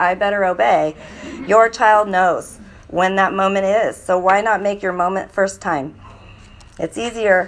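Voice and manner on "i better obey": ordinary delivery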